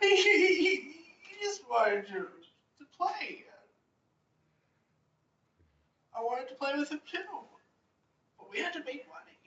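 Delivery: acted baby-like sobbing. Voicing a mercenary whose friend died, to a comforting player: acted crying like a baby. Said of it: "he's crying like a baby right now".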